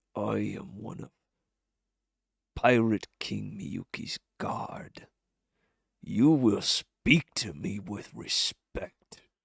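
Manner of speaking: menacing snarling growl. A pirate guard sizes up the crew and speaks, snarling. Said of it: "he kind of snarls a bit and says".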